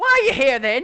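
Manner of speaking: piercing, shrill creature shriek, very high, very loud. Narrating a sphinx that flies up and questions you, in a shrill sphinx voice. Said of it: "his voice is a lot more shrill".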